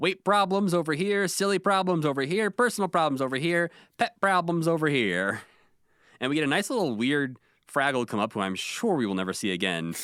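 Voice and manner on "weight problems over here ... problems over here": put-on, high, bossy yell. Retelling how Red organized the crowd, imitating Red yelling. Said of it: "She's yelling at everyone like".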